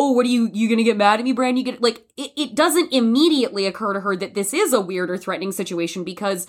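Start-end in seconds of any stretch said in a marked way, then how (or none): 0.0-1.8 acted-out playful, teasing, playing-along banter. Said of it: "she is playing along".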